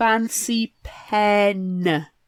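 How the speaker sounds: slowly stretched-out speech. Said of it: "I'm glad you said it, like, to the screen".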